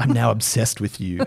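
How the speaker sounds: creepy-sounding delivery. Reading aloud a quoted message, in a creepy-sounding voice. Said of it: "'cause I'm sounding creepy".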